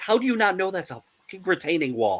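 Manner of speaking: high-pitched jeering shout. Retelling how they yell at home renovation shows on TV: imitating yelling at the TV. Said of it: "yelling at it like a football game".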